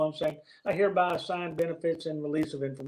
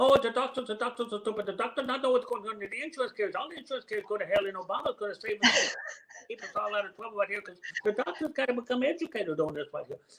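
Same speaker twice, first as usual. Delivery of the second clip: put-on hyperactive, strong Chinese accent, pitched high; 6 semitones higher than usual. Telling Betty about a teacher's class, the speaker is imitating Jen's strong Chinese accent. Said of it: "had a very strong Chinese accent".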